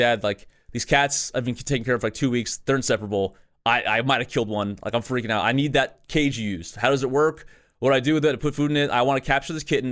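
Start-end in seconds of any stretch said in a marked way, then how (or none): none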